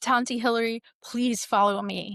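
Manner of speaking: put-on, very serious tone. Retelling a niece coming over during services: imitating someone very serious. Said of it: "very serious".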